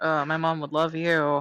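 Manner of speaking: slow, exasperated, fed-up, very annoyed drawl. Acting out what she expects a woman to say about the boy: mock-annoyed. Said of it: "like very annoyed".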